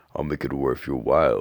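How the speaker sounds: usual speaking voice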